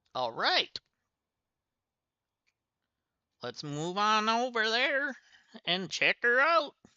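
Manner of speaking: slightly high southern accent. Moving on in the game after the characters talk: southern accent. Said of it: "I've got a southern accent all of a sudden".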